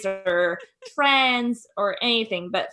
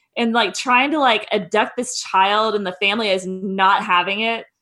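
ordinary talk, nothing marked

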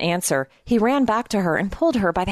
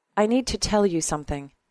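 usual speaking voice

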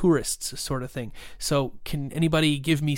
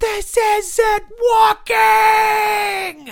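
very high, very loud agonized scream, "walking" stretched; 10 dB louder than usual. A man with rebar shooting out of him replies, screaming in agony. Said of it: "He screams in agony and says".

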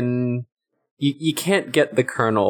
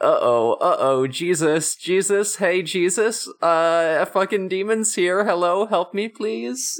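high-pitched pleading priest-like voice; 7 semitones higher than usual. Retelling a scene where a demon grabs a priest: imitating the priest. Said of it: "a priest who is like".

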